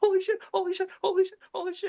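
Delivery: acted, very high, panicked sobbing. Retelling a friend's panicked loop in the car: imitating a friend crying in panic. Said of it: "and he's crying".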